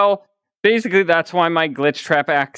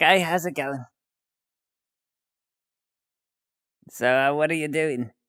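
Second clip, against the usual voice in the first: sassy, cheeky, playful character voice; 6 dB quieter than usual. Acting out a character floating up to someone: sassy Glitchtrap voice. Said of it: "Both hands kinda under the chin like".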